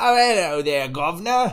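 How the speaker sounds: stock Cockney accent. Showing the british accent most people do: stereotypical cockney accent. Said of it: "which is the the Cockney accent".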